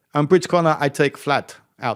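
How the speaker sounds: put-on German accent. Speaker quotes his own words about Bridge Corner, in a German accent. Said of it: "That's my German accent, by the way".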